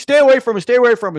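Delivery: put-on, very high, loud yell. Speaker retells a scene where a bystander chases off a mugger, retelling a yell. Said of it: "some guy ends up yelling".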